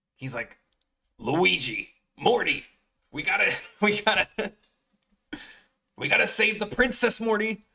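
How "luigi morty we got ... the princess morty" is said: raspy, shrill, very high-pitched angry yell. Describing someone's take on Mario, the speaker does a mock-angry raspy Mario voice. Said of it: "Mario is like all raspy and like angry".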